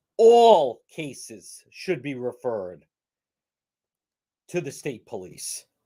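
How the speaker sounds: choked-up, upset delivery, voice catching with emotion. A speaker objecting to a decision, upset and choked up. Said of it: "Listen how upset and choked up I'm getting".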